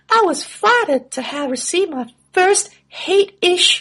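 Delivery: very high-pitched put-on girl voice. Quoting what she goes on to say, in a put-on girl voice. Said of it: "I'm using my girl voice here".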